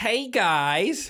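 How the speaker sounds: put-on American kid accent. Describing English kids raised on YouTube, mimicking them with an American kid accent. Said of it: "in an American accent?".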